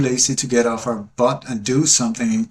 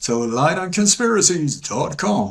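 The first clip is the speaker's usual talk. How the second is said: high-pitched put-on American accent; 5 semitones higher than usual. Doing a bit before closing with a prayer, in a put-on American accent. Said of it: "That's my American voice".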